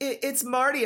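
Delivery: stammered speech. Narrating a son begging his father for help, stammering. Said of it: "I stammered".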